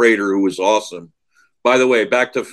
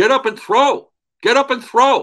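mock very high-pitched yelling scream. Retelling watching a player sit on the bench, speaker is retelling screaming at the TV. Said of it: "I'm like screaming at the TV".

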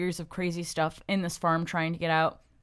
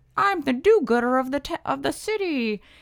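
put-on old-timey 1920s voice, much higher in pitch; 7 semitones higher, 5 dB louder than usual. Describing heroes in a 1920s-style story, voicing a do-gooder in a 1920s voice. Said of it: "That's my 1920s yes. voice".

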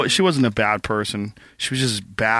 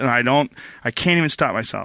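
normal talking voice

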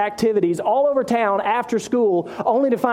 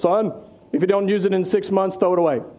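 lecturing, fatherly dad voice; 3 semitones lower than usual. Retelling what his father would say to him, in a dad voice. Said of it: "he would say in his dad voice".

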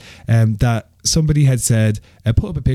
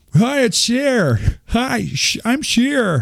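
very high-pitched put-on voice; 11 semitones higher than usual. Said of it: "That was a terrible sheer impression. Try that again".

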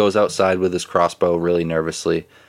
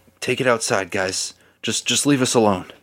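anxious, nervous, much less aggressive tone; 4 semitones higher than usual. Voicing the tavern master as he tells the group to leave; nervous tavern master voice. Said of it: "in a much more nervous tone".

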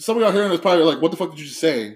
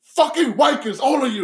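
mock angry gangster voice, higher pitch; 10 semitones higher than usual. Retelling a movie scene where the gangster is pissed off: imitating a pissed-off gangster. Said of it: "he's pissed off".

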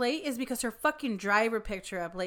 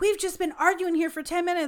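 mock, shrill, loud screaming; 6 semitones higher, 5 dB louder than usual. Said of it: "when the lady was screaming at me".

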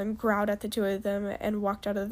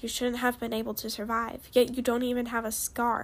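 ordinary delivery, nothing marked

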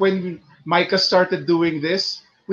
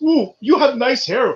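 put-on Mumbai accent, higher pitch; 5 semitones higher than usual. Acting out greeting the other speaker's mom before her hair appointment: attempted Mumbai Indian accent. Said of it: "I was trying to go for a Mumbai accent".

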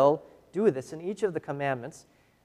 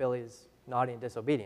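usual speaking voice

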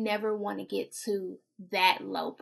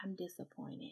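put-on calm voice, quieter; 16 dB quieter than usual. Imitating parents who say they are disappointed: imitating a real calm voice. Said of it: "in that real calm voice".

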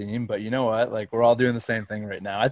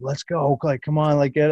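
put-on yelled, hyped-up encouragement; 4 semitones higher, 4 dB louder than usual. Retelling baseball players cheering on a fencing athlete's lift: imitating someone yelling encouragement. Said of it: "yelling at the guy".

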